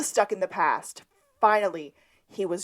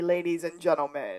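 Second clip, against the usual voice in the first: ordinary delivery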